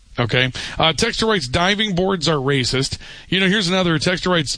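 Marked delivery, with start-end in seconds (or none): none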